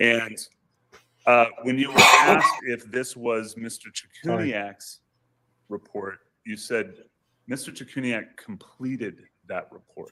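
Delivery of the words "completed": strong stress punched on the word "completed". Quoting a witness's earlier answer back to them: stress on COMPLETED. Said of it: "you stressed the word completed".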